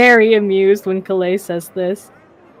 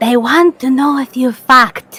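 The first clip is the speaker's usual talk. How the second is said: playful fake whisper, slightly higher; 5 semitones higher than usual. Leaning toward another character at breakfast: mock whisper. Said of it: "mock whispers".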